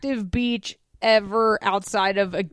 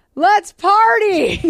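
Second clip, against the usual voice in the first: mock very high-pitched, loud yelling shout; 10 semitones higher, 6 dB louder than usual. Imagining a stranger walking up to a family on the beach, retelling a shout. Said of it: "a total stranger just walks up and shouts".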